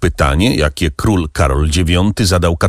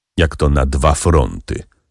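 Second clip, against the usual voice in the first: ordinary delivery, nothing marked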